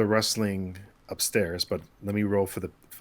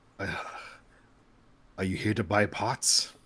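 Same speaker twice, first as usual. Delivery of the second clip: put-on elderly man character voice. Voicing an old man asking a player about pots: voicing an old man. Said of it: "an old man kinda comes down the stairs".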